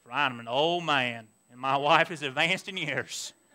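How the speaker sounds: put-on very low, deep, soft North Carolina accent. Reading a Bible verse aloud, speaker voices a character's reply in a North Carolina accent. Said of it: "I'm going to use that North Carolina accent".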